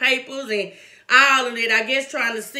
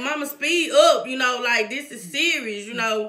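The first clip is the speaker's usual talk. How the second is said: ordinary talk, nothing marked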